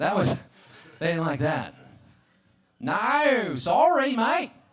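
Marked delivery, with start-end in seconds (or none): 2.8-4.5 bad put-on Australian accent, pitched up. Speaker shows off the Australian accent that got him banned, a bad Australian accent. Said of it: "when I try to do my Australian accent".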